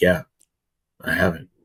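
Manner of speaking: mock dropped voice. Retelling how he answered when questioned, imitating a lowered voice. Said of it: "Why did your voice lower?".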